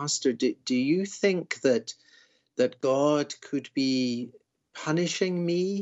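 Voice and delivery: put-on halting, uncertain, slow, hesitant delivery. Quoting people who ask their pastor something, mock-hesitant question. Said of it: "with great hesitation, Pastor, and they'll say it like this".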